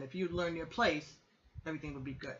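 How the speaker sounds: plain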